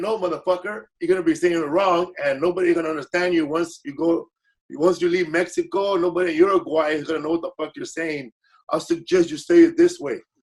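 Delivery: ordinary delivery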